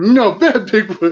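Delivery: high, loud mock scolding tone.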